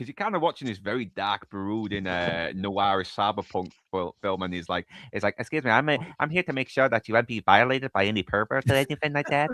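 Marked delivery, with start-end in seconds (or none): 5.4-9.5 put-on dorky, dweebish, nerdy voice. Retelling a movie scene, imitating a dweeb voice. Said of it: "he's pretending to be a dweeb".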